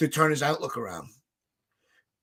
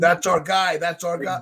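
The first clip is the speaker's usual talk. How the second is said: plain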